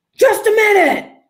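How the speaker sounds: mock, very high-pitched, angry shout. Retelling what a man in the basement bathroom yelled, retelling his angry yell. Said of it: "And like in this angry tone".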